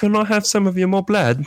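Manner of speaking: clumsy, bad Cockney accent, very high-pitched. Begging for more blood in a bad Cockney accent. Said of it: "my Cockney".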